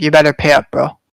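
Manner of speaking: aggressive, threatening put-on tone. Answering how the kid's voice sounded when demanding money: imitating an aggressive demand. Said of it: "Way aggressive".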